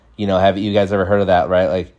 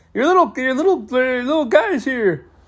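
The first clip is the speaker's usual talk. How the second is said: very high, boozy, beer-in-hand dad voice. Retelling a friend's drunk dad calling his son: imitating Barney from Simpsons. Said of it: "He was like Barney from Simpsons".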